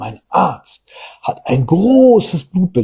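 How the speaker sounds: großes stressed hard and heavy, full of pride. Quoting a client speaking proudly about their doctor, mock-proud stress on großes. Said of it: "ganz stolz ... Da wird dieses Wort groß auch noch richtig betont gemacht".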